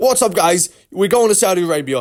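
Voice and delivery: put-on, reined-in, mild yell.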